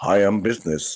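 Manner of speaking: all-business, unfriendly, straight-laced tone. Mocking how another speaker greets people: imitating a straight-laced, unfriendly tone. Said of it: "there's no friendship in that tone".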